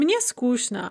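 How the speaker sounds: ordinary talk, nothing marked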